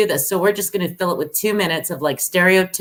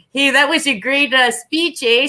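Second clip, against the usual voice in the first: put-on Canadian accent; 7 semitones higher than usual. Recounting thanking a keynote speaker onstage in a lumber jacket; put-on Canadian-style voice. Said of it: "I like did the voice and everything".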